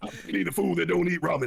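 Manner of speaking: rough, creaky, raspy tough-guy voice. Joking after being told the voice sounded like Mister T: Mister T impression. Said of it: "You sounded like Mister T".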